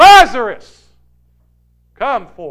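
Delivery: very loud, authoritative, commanding call. Retelling a scripture scene, acting out a commanding call. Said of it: "he says with a commanding voice".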